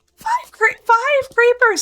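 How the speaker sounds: voice cracking mid-word, very high. Reacting to finding five creepers at once, the speaker's voice cracks. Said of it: "my voice cracked there".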